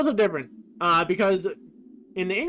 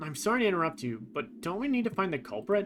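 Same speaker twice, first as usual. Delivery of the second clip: usual speaking voice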